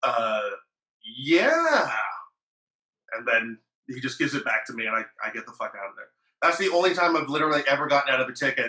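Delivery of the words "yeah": put-on guilty eight-year-old voice, sing-song, drawn-out yeah. Retelling answering a police officer: imitating a lying eight-year-old. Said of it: "I answer like this".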